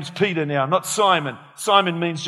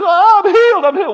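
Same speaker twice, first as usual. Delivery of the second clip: mock very high, loud cry; 14 semitones higher, 8 dB louder than usual. Acting out a lady in a wheelchair at the supermarket: imitating a lady being healed. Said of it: "the lady goes".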